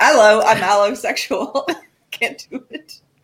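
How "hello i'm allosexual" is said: attempted, put-on British accent. After wishing to hear one, the speaker tries an attempted british accent. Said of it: "I want to hear a British accent".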